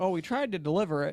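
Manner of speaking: ordinary talk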